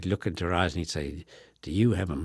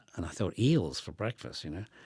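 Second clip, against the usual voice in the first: ordinary talk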